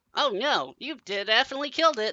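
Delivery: high-pitched, chattering little gnome voice. Narrating a story, the speaker voices a small gnome who chatters in a high-pitched voice. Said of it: "begins to chatter in a high-pitched voice".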